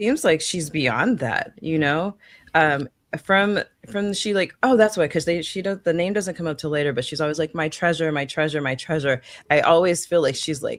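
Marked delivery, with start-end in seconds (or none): none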